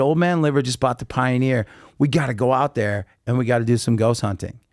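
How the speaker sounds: ordinary talk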